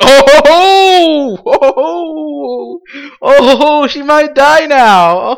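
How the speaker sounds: play-acted, high, very slow giggle, each ho drawn out. Retelling how an audience laughed at dramatic irony, imitating the audience giggling.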